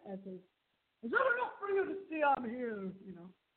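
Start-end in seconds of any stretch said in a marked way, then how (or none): 1.0-2.9 put-on shouted in an Irish accent. Narrator recounts the deceased answering a caller, voicing his reply in an Irish accent. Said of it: "the Irish accent".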